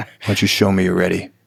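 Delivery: upset tone, voice dropped low. Showing how a coach speaks to a class when upset: upset, voice dropped low. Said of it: "when I am upset, it drops back down".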